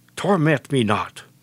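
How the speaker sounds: serpentine, hissing demon voice. Voicing the demons crying out to the Lord: hissing demon voice. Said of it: "as they hiss at the Lord".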